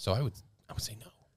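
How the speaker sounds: fast, voiceless whisper. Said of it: "I whispered".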